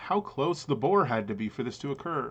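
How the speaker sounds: ordinary talk, nothing marked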